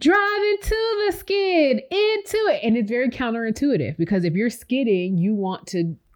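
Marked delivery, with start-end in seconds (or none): 0.0-2.6 acted, very high-pitched, drawn-out yell. Retelling calling out from the car on icy roads: imitating own past yelling. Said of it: "in the car yelling".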